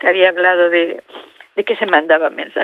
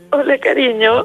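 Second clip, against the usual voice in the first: high, tearful voice, crying through the words; 6 semitones higher than usual. A mother on the phone greeting her child; crying. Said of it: "¿Por qué lloras, tonta?".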